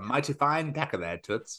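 horrible put-on British radio voice. Recalling a forgotten bit and mimicking it: horrible British radio voice. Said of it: "That really horrible British radio voice".

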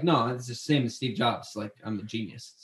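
acted, low, dead serious, totally dry deadpan. Retelling what the other speaker said at lunch: imitating a dead serious tone. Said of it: "dead serious".

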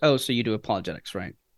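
put-on patronizing, superior, talking-down tone. Retelling what a keynote speaker said backstage: imitating a condescending tone. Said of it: "in a kind of condescending tone".

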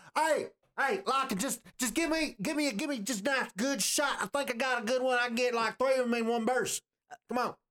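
squeaky, very high alien creature voice. Voicing a tentacled squid person leaning out of a hover truck: tentacled squid person voice. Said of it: "leans out the window of the hover truck going".

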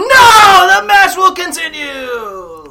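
booming, very loud, very high commentator shout. Calling a wrestling finish as a joke: yelling wrestling commentary. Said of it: "yelling New Japan commentary".

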